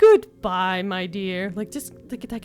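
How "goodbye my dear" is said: very loud, vaguely passive-aggressive tone. Repeating a game character's farewell line: imitating a passive-aggressive goodbye. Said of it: "vaguely passive-aggressive".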